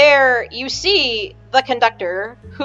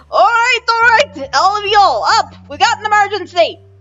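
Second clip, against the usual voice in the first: put-on very loud, shrill old man voice yelling, odd accent; 8 semitones higher, 4 dB louder than usual. Narrator voices an old man conductor waking everyone for an emergency, loud older man with weird accent. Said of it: "a very, very loud voice with a weird accent".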